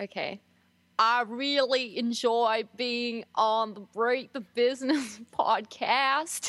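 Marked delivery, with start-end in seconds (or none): 1.0-6.5 slow, deliberate, put-on American accent. Guest asked by the hosts to say a line about their podcast, in an american accent. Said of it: "Now we have to hear the American accent".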